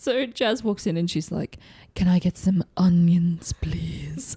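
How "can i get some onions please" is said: slow, drawn-out, put-on sexy voice. Retelling a scene where Jazz asks for onions: imitating Jazz's put-on sexy voice. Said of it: "Don't forget to use your sexy voice".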